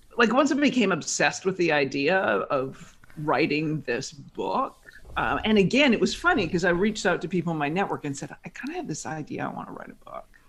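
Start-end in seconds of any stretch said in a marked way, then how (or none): 8.5-10.3 very quiet, barely-there whisper. Retelling telling people in a network about a book idea: imitating a very quiet voice. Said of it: "I said it in a very quiet voice".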